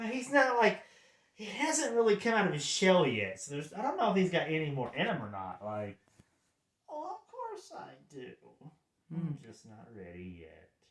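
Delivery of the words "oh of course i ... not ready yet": very hushed, calm, creepy voice. Voicing a creepy character who hasn't come out of his shell: calm creepy voice. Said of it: "this is a creepy chill".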